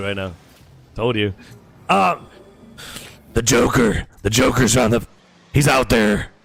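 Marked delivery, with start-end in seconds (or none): 3.3-6.2 hard-pushed, throat-straining caped superhero voice. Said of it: "I can't do it. My throat's fucked".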